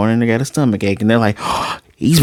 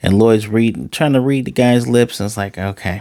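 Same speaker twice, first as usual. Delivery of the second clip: ordinary delivery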